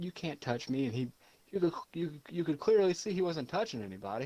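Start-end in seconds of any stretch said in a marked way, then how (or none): none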